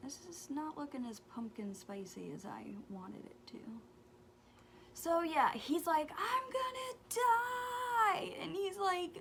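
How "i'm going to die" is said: frantic, very high panicked scream, die drawn out. Retelling her son's panic: imitating a panicked scream. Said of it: "flipping out, screaming".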